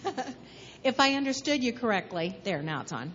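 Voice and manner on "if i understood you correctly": speaking up, louder. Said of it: "I'll talk louder".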